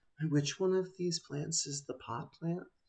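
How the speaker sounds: soft, hushed mutter under the breath. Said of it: "sort of muttering under their breath".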